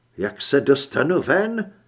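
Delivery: high, wary, suspicious, distrustful voice. A woman asks the man offering his car a question, distrustfully. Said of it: "Zeptala se nedůvěřivě".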